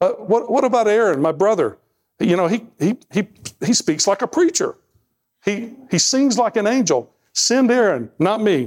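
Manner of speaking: high stammering voice. Retelling Moses answering the Lord's call, stuttering Moses impression. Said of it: "I stutter all the time".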